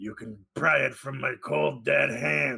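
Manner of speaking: put-on gruff movie cowboy voice. Doing a line as a gun-toting Doctor: Clint Eastwood voice. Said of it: "Is that what Clint Eastwood sounds like?".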